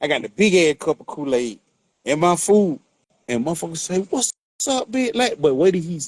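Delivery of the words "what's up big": high, tough street-style voice. Retelling a stranger's greeting in Vegas: imitating a gangbanger greeting. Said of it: "how them gangbangers be".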